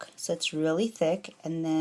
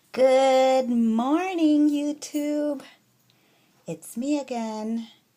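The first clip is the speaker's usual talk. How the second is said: excited, high, loud, eager, drawn out very slow; 8 semitones higher, 7 dB louder than usual. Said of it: "the excitement in my voice".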